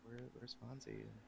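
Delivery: very quiet, hushed, tearful, acted-out sobbing. Retelling how a caller asks where someone is, imitating Gary crying. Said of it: "he's just crying. Like".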